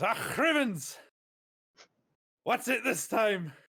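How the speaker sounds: put-on very loud, very high, slow accented cry. Describing the character finding out he's being looked for, Wee Mad Arthur's accent. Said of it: "I'll tell you what he do have as an accent".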